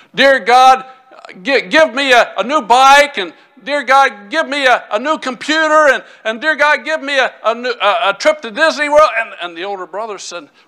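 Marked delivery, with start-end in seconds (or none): 0.2-9.1 put-on boy's sudden, loud, high-pitched hollering. Telling a joke about a boy praying by the bed: imitating a boy praying loudly. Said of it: "the younger one got real loud all of a sudden".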